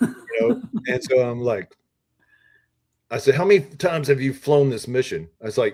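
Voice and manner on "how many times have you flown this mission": acted-out, pointed, mild half-yell. Retelling confronting a gruff guy who kept asking questions, retelling a yell. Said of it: "I need to yell at this guy".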